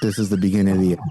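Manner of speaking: put-on whisper. Retelling what they whispered to their newborn children: imitating a whisper. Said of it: "I whispered in their ear".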